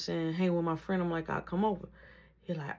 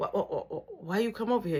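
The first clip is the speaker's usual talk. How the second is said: acted nervous stammering, pitched higher; 3 semitones higher than usual. Retelling own question to a visitor: imitating own nervous stammer. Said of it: "I'm nervous".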